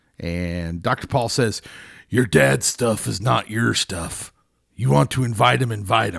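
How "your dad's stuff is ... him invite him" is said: creaky, rough-sounding voice. Retelling a therapist's advice from a show episode, sounding like Sam Elliott. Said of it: "I sounded kinda like Sam Elliott there".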